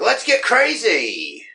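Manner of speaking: high, slow, belted mock scream.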